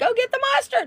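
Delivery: very high-pitched screaming, voice pushed way up. Retelling yelling at the bar owner, re-enacting own scream. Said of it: "and I was screaming".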